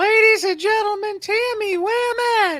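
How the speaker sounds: very high, loud cartoon game-show announcer voice. Settling an argument over a name, the speaker quotes the Whammy: Whammy voice. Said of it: "I can still do that voice after all these".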